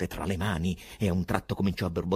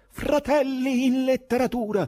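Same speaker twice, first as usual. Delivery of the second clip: very high-pitched, loud shouting cry; 6 dB louder than usual. Raising a candle, a man calls out to his fellow writers: shouting. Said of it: "gridò".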